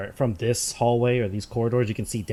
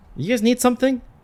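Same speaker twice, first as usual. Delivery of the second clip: very high, suddenly alert tone; 7 dB louder than usual. A man posted to keep riffraff out questions the group, suddenly alert tone. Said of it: "he suddenly gets more of an alert tone".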